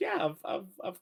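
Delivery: put-on very high, elderly old lady voice. Voicing the inn lady answering the guests: old lady voice. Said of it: "her old lady voice".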